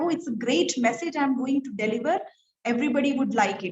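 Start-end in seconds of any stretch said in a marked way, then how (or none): none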